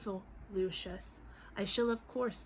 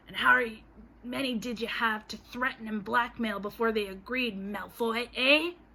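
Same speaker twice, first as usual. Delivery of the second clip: bellowing, very loud, furious angry roar; 6 dB louder than usual. Leaping to his feet and accusing the other man, roaring. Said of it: "he roared".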